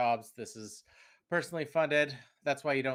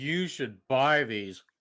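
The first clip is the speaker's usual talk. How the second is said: heavy, dripping, exaggerated sarcastic tone; 4 dB louder than usual. Joking about taking a sneaker endorsement and doing it sarcastically: exaggerated sarcastic delivery. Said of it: "doing it really sarcastically".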